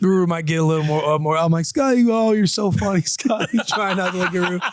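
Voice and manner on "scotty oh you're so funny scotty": high-pitched, put-on giggles leaking through the words. Retelling talking to scotty while laughing: retelling own laughing line. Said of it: "I'm laughing".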